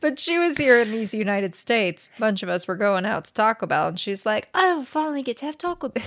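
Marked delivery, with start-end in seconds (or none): 4.5-6.0 put-on British accent, pitched up. Retelling what she said when the group went out, in a put-on British accent. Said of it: "This is my British accent".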